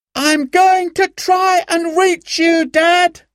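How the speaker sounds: very high, shouted calling out. Simon leans over the path's edge, calling down the mountain to dad, shouting. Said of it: "he shouted".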